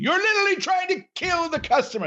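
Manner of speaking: very high, shrill TV chef voice outburst. Talking about a cooking show, doing a Gordon Ramsay impression. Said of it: "That's my Gordon Ramsay impression".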